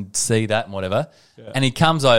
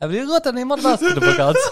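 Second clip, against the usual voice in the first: put-on Spanish accent, much higher pitch. Retelling Robert asking for more basketball cards: imitating Robert, Spanish accent. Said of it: "So now he's Spanish".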